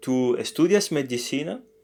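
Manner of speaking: rising pitch at the end of "medicina". Teaching that a Spanish question raises the voice at the end: rising pitch on medicina. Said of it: "It's a question, so we have to raise our voice at the end".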